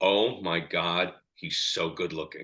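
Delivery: imitated whisper. Retelling what his wife kept saying beside him: imitating someone whispering. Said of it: "kept whispering to me".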